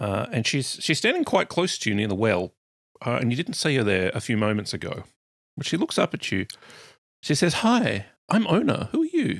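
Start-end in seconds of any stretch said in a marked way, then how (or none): 7.5-9.4 put-on very high, slow, swooping sing-song small-girl voice. Narrating a story as a small girl appears by the well: Ona, small girl voice. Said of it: "you hear the voice of a small girl".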